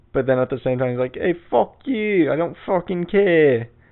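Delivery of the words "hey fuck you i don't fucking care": bad put-on East Coast tough talk, angry, slow. Acting out how a nice East Coast guy also gets angry, use a bad put-on East Coast accent, mock-angry. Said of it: "I know that's the worst accent ever".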